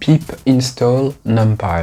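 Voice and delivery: slow, French-accented English.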